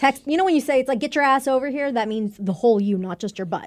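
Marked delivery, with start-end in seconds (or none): none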